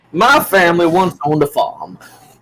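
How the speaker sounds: put-on southern US twang, swooping. Among several speakers joking around, one adopts a southern accent. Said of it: "if he adopts the southern accent".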